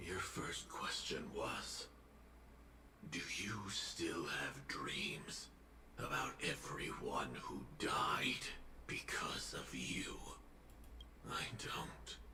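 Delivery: breathy, whispered voice-changer male voice.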